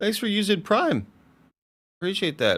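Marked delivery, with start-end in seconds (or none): 0.0-1.1 very high voice, breaking and cracking. Thanking a viewer for using Prime, voice cracking. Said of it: "My voice cracked".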